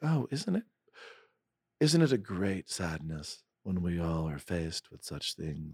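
thoughtful voice. Speaker parodies writers who watch their hand float as they gesture, in a thoughtful voice. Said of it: "now I'm using my thoughtful voice".

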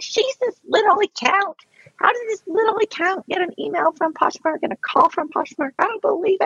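very high, sneering, scoffing disbelief. Imitating people who doubt the calls: mocking skeptics' voice. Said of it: "I don't know why I'm talking like this".

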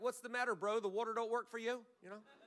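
dry, sarcastic, needling ribbing tone. Speaker retells Jesus addressing a man paralyzed 37 years, imitating him being sarcastic. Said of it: "And he's sarcastic".

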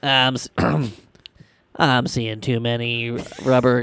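bad impression, low, slow drawl. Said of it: "Sounds like Ned from South Park".

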